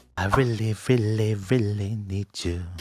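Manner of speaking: put-on sexy R&B voice. Speaker trying out a line: sexy R&B voice. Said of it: "That's that's my sexy R and B voice".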